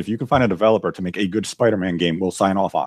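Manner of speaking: ordinary talk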